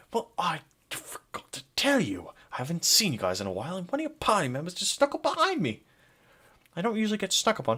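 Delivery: high, hushed half-whisper under the breath. A game character speaks to players whose party member snuck up on him, half-whispering. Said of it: "he's whispering now".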